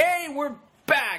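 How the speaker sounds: very high-pitched, eager and enthusiastic. A podcast host shows a co-host how an intro should sound: enthusiastic. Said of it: "You should have had more enthusiasm behind it".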